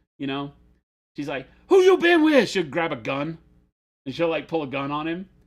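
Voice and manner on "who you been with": very high, very loud, crazed scream. Retelling how a woman confronts her partner when he gets into the car, imitating someone screaming. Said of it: "just starts screaming at him like all crazy style".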